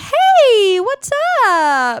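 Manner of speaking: very high-pitched, very loud, sing-song voice. Describing how their sisters answer the phone, imitating sisters' high-pitched voice. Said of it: "They both have like very high pitched".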